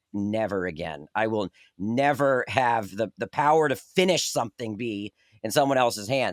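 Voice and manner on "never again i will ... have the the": ordinary delivery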